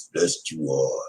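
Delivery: very low, soft, hushed murmur. Finishing a shout-out, in a Yoda voice. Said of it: "That's a Yoda voice".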